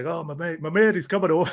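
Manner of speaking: put-on Bradford accent. Retelling what a man said about his mate coming over: thick Bradford accent. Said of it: "he had that thick Bradford accent".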